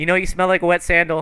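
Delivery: put-on high, loud, snide little boy voice.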